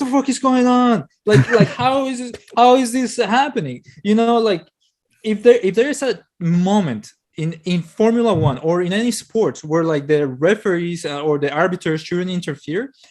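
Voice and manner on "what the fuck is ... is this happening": put-on full-throated outraged scream at top of lungs. Retelling own reaction while watching the race live: imitating own screaming. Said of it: "I'm screaming on the top of my lungs".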